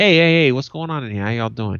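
put-on lively, animated, upbeat voice, a touch forced. Retelling how they greet workers on arriving: imitating own animated greeting. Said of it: "I'll be a little bit more animated".

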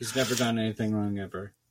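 low, dry, flat, expressionless deadpan. Showing off Sarge's cat, quoting how its owner talks: Sarge's deadpan voice. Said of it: "The deadpan voice".

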